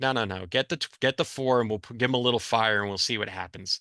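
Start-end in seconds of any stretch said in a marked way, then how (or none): none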